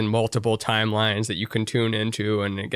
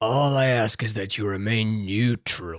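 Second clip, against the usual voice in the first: put-on rough New Zealand accent. Quoting a line from the Boba Fett show, in a gruff Boba Fett accent. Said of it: "his New Zealand accent and the the gruffness of his voice".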